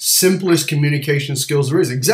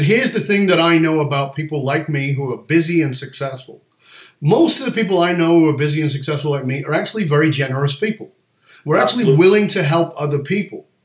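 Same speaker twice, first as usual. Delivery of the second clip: ordinary talk, nothing marked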